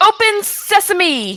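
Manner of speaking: high, drawn-out yell.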